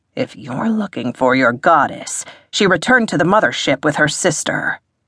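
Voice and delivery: ordinary talk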